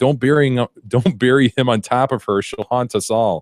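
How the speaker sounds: frantic, urgent, insistent screaming. Retelling a burial at the cemetery: imitating someone screaming. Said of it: "they're screaming".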